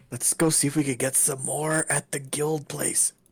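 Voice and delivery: quiet muttering under the breath. Speaking in character to the party about going to the guild: muttering under breath. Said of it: "under my breath".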